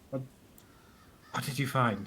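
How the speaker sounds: put-on, sly, secretive, sneaky hushed voice. Voicing a character asking again what was found: sneaky. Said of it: "in a sneaky way".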